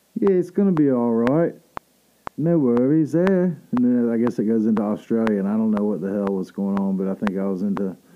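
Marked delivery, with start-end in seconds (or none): 0.2-3.6 consoling, put-on British accent, raised and high pitched. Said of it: "British accent".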